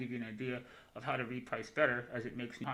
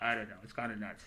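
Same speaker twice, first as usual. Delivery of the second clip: ordinary talk, nothing marked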